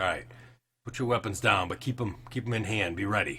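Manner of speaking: put-on military captain voice. Voicing a captain giving orders to his soldiers: captain ordering his soldiers. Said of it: "in common to his soldiers, he's like".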